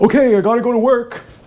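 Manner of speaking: mocking typical-guy voice. Telling any guy listening this is an impression of him, mocking impression of a guy. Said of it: "this is my impression of you".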